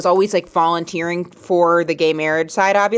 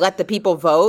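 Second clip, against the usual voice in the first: ordinary talk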